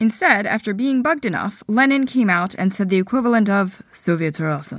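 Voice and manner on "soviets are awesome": mock utterly monotonous, low, flat, bored delivery. Retelling what Lenin finally told people waiting for orders, in Lenin's most monotonous voice. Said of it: "in his most monotonous voice".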